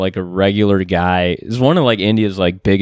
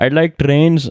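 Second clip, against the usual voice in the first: put-on, simple Indian accent, pitched up; 6 semitones higher than usual. Doing a joke impression of the Indian Forrest Gump remake character.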